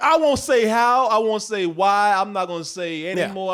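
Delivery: normal talking voice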